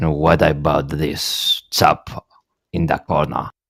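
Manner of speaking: hushed voice. Asking the other speaker about a chap in the corner: lowered voice. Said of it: "I'm lowering my voice".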